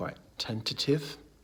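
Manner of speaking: unsure upturn at the end of "tentative". Describing shy, awkward people, said in a tentative way: upward inflection on tentative. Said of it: "I said that in a tentative way then, didn't I? With a, a upwards inflection at the end".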